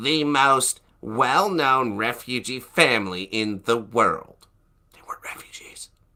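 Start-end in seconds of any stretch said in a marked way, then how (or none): 0.0-4.5 entitled, demanding, complaining voice. Reading out a quote about the Holy Family, put on a Karen voice. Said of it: "I need a Karen voice".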